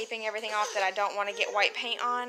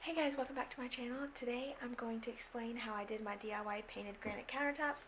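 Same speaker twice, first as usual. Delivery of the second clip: hushed whisper, much quieter; 12 dB quieter than usual. Welcoming viewers to a channel while the kids are asleep, whispering. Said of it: "Sorry that I'm whispering".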